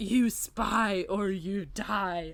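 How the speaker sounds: weird mechanical gravelly voice, ground out like a machine. Recounting a scene, the speaker gives Opal's reply in her weird mechanical gravelly voice. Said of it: "in her weird, like, mechanical, gravelly voice".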